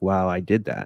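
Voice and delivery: ordinary talk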